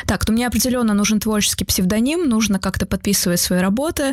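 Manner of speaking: plain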